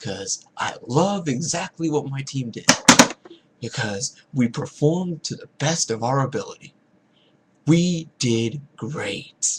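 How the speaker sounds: sarcastic, fake enthusiastic cheer. Pretending to praise a team that played badly: mock-cheerful sarcasm. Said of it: "That was total sarcasm there".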